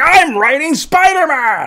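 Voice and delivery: very high, gushing, thrilled excitement, voice way up. Imitating an enthusiastic comic writer: Dan Slott voice like Stan Lee. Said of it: "he sounds like a weird amalgamation of Stan Lee".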